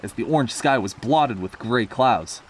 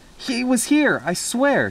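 very high, slow, halting stammer; 12 semitones higher than usual. Narrator voicing Nancy answering a doubting rescuer: stammering. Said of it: "stammered Nancy".

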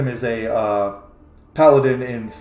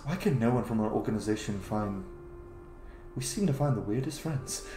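very hushed, very quiet under-the-breath grumbling mutter; 13 dB quieter than usual. A storyteller voices a character watching guests enter, muttering under his breath. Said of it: "And under his breath".

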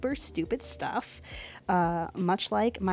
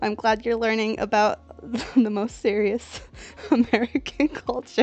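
talking through laughter, higher and louder; 3 semitones higher, 7 dB louder than usual. Reacting to chat about famous american people, laughing while talking. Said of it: "my ribs hurt from laughing so much".

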